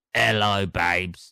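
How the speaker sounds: put-on low, gruff, aged old woman's voice. Recalling how a date greeted them, a speaker imitates her gruff old voice. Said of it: "Just a bit of a gruff old voice".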